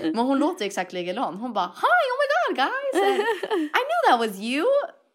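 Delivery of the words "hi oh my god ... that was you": very high, sing-song, squeaky cartoon-mouse voice. Retelling how a best friend greeted the group, imitating Schmalina's Mickey Mouse voice. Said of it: "Det låter som Mickey Mouse".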